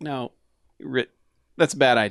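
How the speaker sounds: ordinary talk, nothing marked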